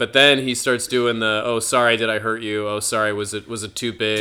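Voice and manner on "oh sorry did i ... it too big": plain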